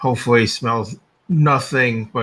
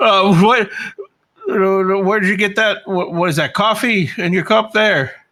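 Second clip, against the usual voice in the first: gagging while talking, much higher pitch; 9 semitones higher, 3 dB louder than usual. Role-play player speaking in character to Trench: gagging while talking. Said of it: "I'm still kind of gagging from the smell".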